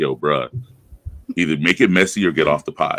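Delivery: ordinary delivery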